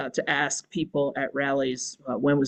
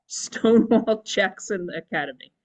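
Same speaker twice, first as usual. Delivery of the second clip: laughing through the words, higher pitch; 5 semitones higher than usual. Reading a sign's name aloud, laughing while talking. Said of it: "it's really hard to say that without laughing".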